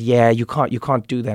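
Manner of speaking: ordinary delivery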